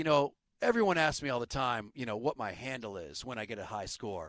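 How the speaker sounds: very low, utterly earnest, dead-serious boasting tone. Retelling a movie villain's boast, imitating someone dead serious. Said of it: "he's being a million percent serious".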